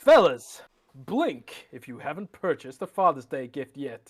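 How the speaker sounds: put-on American accent in ad-read style. Starting a podcast ad read about Father's Day gifts, American accent. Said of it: "let's use your American accent here".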